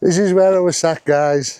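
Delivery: high announcer voice. Talking to viewers on camera while wearing a mic, shouting. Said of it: "I don't know why I'm shouting".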